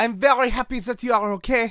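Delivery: put-on loud, high, belted French accent. Role-playing Jazz greeting another character, in a French accent. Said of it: "When did Jazz get a French accent?".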